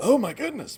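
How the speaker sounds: pitched very high, throat catching, choked up. Answering a quiz question, then suddenly choked up. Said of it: "Choked up?".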